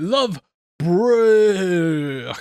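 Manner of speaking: terrible, bad zombie-like groaning moan. Analysing a zombie film, the speaker tries a terrible zombie moan impression. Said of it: "that's a terrible impression".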